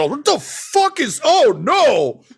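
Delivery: very high, drawn-out, swooping, frightened panicked yell. Game master voicing an enemy who just missed a swing, yelling. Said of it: "he just yells".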